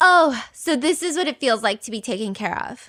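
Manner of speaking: put-on ironic, sarcastic tone. Retelling what a woman said on handing over her backpack, retelling a sarcastic remark. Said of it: "she sarcastically goes".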